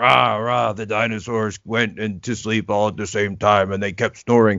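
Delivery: put-on cross, angry voice. Showing how you read bedtime books when your child asks for angry, mock-angry reading. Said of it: "read it angry".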